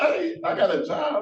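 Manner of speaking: very high shouted outburst. In court, as a bond is revoked, someone addresses the judge, yelling out. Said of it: "I don't know why people yelling at me".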